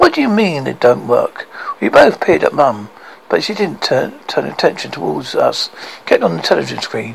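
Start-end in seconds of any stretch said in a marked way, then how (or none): none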